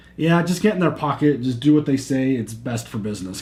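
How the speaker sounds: ordinary talk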